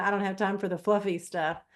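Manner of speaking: ordinary delivery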